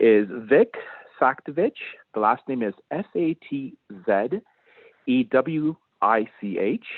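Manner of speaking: very slow, careful, deliberate spelling out. Giving the audience a reference author's name, speaking very slowly. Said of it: "I'm going to speak very slowly".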